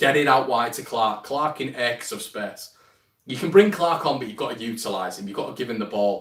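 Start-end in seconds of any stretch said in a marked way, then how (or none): none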